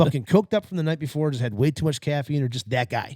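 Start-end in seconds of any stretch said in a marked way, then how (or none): none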